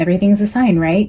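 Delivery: dripping, very sarcastic quip. Telling a story, voicing someone's imagined remark as a mock-sarcastic quote. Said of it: "like just very sarcastically".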